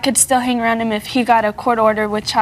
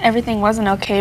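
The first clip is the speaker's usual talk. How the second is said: usual speaking voice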